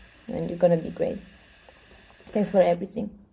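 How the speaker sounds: tearful voice, crying through the words. Thanking a teammate for everything in front of the team: crying while talking. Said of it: "I'm crying too".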